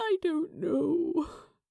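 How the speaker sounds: high, hoarse croaking voice. Reading a story aloud, a tearful character answers: croaking. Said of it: "Aziraphale croaked".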